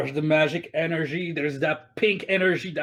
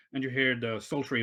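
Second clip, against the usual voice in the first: ordinary delivery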